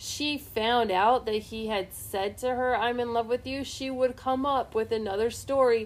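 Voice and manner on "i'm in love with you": plain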